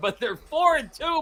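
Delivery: high giggly words breaking into laughter. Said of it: "I can't say it without laughing".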